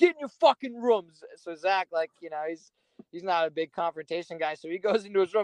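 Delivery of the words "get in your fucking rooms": mock furious, angry, shouted yell. Retelling a confrontation, the speaker acts out a man yelling at Zach. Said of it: "he just yells at Zach".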